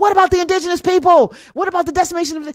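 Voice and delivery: acted loud, high-pitched yelling. Retelling how they yelled at the TV during a show, retelling yelling at the TV. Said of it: "I'm sitting there yelling at the TV".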